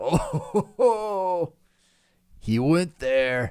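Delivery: put-on guilty laughter through words. Imitating how people laugh as if laughing is not okay: imitating laughing like it's not okay. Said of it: "how they laugh".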